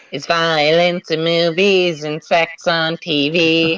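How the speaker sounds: very high-pitched put-on character voice. Friends trying out voices; asked for Cartman's, answering in a Cartman voice. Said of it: "Cartman's pr- uh, voice?".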